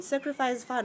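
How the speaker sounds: plain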